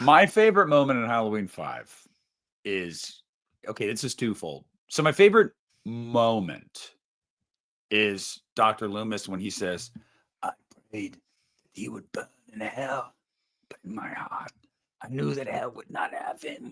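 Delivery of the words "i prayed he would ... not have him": put-on breaking voice, quieter. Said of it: "his voice is, like, giving out".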